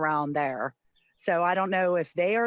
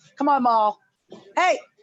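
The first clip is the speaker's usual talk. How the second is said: shouting, higher and louder; 7 semitones higher, 6 dB louder than usual. Calling to the dog during a call: yelling at the dog. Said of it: "was still yelling at the dog".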